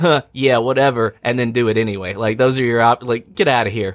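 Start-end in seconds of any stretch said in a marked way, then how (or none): 0.0-1.2 put-on sarcasm, slower pace. Speaker mocking a game's dialogue choices, acting out a sarcastic reply. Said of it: "Or sarcastically".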